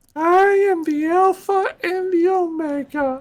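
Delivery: over-the-top put-on villain voice, very high. Speaking as a character while playing out a shared story, over-the-top character voice. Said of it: "He enjoys doing that voice far too much".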